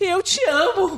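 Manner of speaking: mock crying, high and tearful through the words. Retelling her own declaration to the other speaker: imitating her own crying. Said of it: "eu já tava chorando".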